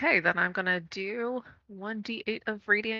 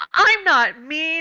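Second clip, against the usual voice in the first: loud, high-pitched, annoyed, a bit mad; 8 semitones higher, 9 dB louder than usual. Voicing a character who was just called mean, acting a bit mad. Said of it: "mad face a little bit because she just got called mean".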